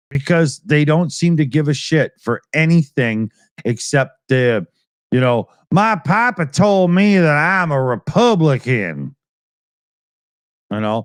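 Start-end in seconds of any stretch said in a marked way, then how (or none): 5.7-9.1 put-on slow, dim, dopey Southern accent caricature. Mocking a Southern voter with an impression: imitating a Southern voter. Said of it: "my impression of your average Southern idiot".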